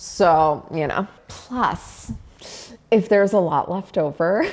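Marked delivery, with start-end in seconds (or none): 1.3-4.5 speech broken by giggling and laughing. Talking about having leftovers while cooking, laughing while talking. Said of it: "sorry, I'm laughing at myself".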